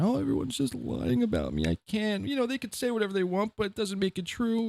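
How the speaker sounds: high, swooping, whiny crybaby wail. Mocking the other speaker for acting like a victim: mock crying like a victim. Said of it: "crying like you're some sort of victim here".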